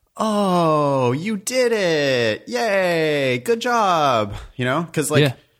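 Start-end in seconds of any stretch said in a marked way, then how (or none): 0.2-4.4 very slow, super patronizing, condescending tone. Doing a comedy golf clap in class, mock condescending praise. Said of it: "I do the super condescending like".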